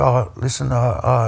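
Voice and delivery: voice cracking and breaking up, very slow. Retelling a phone call from her, imitating a cracking, breaking voice. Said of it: "she's voice is breaking up and cracking".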